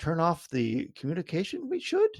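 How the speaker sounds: disbelieving, surprised, pitch swinging high and swooping. Retelling a movie line of Yoda: imitating Yoda sounding surprised. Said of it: "the way he's like".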